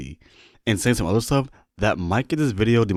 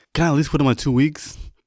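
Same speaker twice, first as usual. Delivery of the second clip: put-on pleading, begging tone; 4 semitones higher than usual. Retelling a coworker's plea to the coach: imitating someone pleading. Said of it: "he starts pleading".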